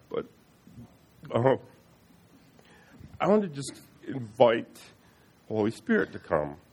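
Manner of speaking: very slow, choked-up words, near tears. Speaker recalls wanting to invite the Holy Spirit before a crowd, choked up. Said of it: "I'm getting choked up now".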